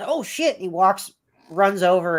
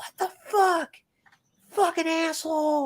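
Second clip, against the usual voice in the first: mock screaming, much higher; 12 semitones higher than usual. Retelling rolling down the car window at another driver, retelling a scream. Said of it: "Like screaming at him as my window's down".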